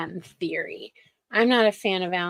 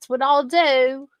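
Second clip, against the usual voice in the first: clumsy fake Australian accent, pitched up; 6 semitones higher than usual. Quoting what a woman says, in a bad Australian accent. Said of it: "I sound like the crocodile hunter".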